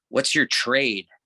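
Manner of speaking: openly disgusted, scornful tone. Retelling a journalist's question about his trade, imitating a disgusted tone. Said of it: "he looked at me with such disgust".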